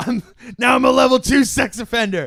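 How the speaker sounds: high, loud mock anime villain boasting.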